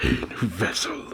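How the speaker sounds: whispered with evil intent. Recapping a manga scene, voicing Kurama speaking to Kushina: Kurama voice. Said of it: "I don't know if I can do the voice".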